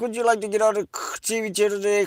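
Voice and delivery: put-on very high, loud Indian English accent. Retelling a DirecTV support call, imitating the worker in India who answers. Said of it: "that dude in like India that answers".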